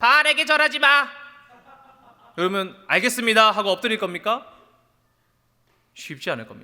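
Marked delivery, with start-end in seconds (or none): 0.0-1.1 put-on young child's voice, high and loud. Acting out an eight-year-old first grader's warning, childlike voice. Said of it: "좀 더 어린 목소리로 해드려야 될까요?".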